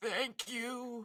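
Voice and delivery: very high, put-on elderly woman voice. Retelling being let into a room, answering in put-on old lady voice. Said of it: "in an old lady voice".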